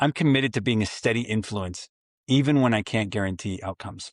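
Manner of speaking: ordinary talk, nothing marked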